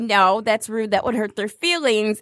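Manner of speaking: ordinary talk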